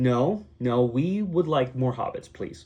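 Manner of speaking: normal talking voice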